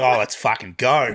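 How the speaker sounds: put-on Australian accent. Showing how an Australian would say it after a British attempt: Australian accent. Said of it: "Australian be like".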